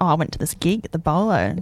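plain

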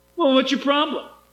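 put-on sarcastic tone. Retelling questioning a young man about his sin: imitating own sarcastic tone. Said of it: "I was really sarcastic with them".

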